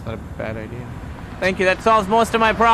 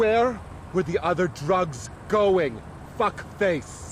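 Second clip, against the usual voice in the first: put-on scary movie star voice; 5 dB quieter than usual. After your last voice was called bad, show the listener another one: a Malkovich impression.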